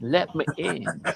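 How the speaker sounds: whispered, put-on hillbilly devil voice. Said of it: "sound like one of those hillbillies".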